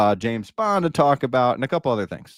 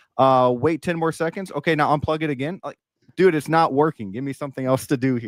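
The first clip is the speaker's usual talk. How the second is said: usual speaking voice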